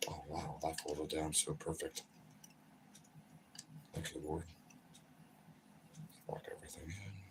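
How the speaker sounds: whispered mumbling under the breath. Talking to himself while working on camera, mumbling to himself. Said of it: "Sorry, I'm mumbling".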